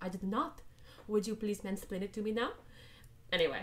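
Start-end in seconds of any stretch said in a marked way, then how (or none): 0.0-2.5 faint, light French lilt, playfully done. Describing a woman answering a man who explains a book to her: playful light French accent. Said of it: "says in a playfully light French accent".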